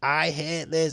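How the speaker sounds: play-acted, toned-down half-scream, kept small. Retelling own reaction to a game mini game: imitating own screaming. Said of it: "I was screaming".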